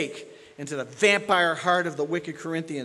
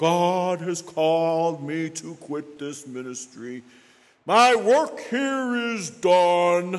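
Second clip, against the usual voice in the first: slow, sarcastic, scornful mocking drawl on "done"; 4 dB louder than usual. A preacher addressing his listeners, in mocking imitation. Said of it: "I'm mocking it".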